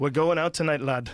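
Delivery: bad, put-on Irish accent. Imitating Irish lads heading out for a first bar fight: bad Irish accent. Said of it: "That's probably the worst accent ever".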